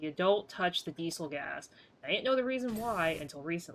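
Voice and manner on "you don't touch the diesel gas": normal talking voice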